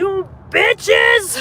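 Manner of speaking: cursing with heavy stress on bitches. Retelling how a lady was cursing for real, with emphasis on "bitches". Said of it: "She was putting emphasis on the word".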